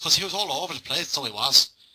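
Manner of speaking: put-on Northern Irish accent, best attempt. Boxing talk about a knockout stoppage, in a northern irish accent. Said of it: "That was my Irish accent, Northern Irish accent".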